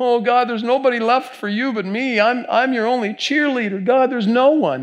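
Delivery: high, whining, pleading lament.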